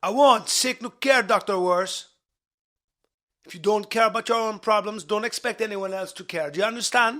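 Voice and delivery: low-pitched put-on Jamaican accent throughout. Answering the other speaker, who points out the accent, in a Jamaican accent. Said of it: "with a Jamaican accent".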